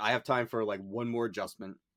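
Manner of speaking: ordinary talk, nothing marked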